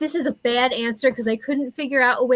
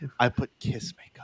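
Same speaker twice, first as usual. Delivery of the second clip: playful, joking mock-secret hushed whisper; 12 semitones lower, 8 dB quieter than usual. Answering a question, saying the answer quietly as a joke: mock-quiet voice. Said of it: "I've gotta say that quietly".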